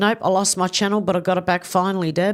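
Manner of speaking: plain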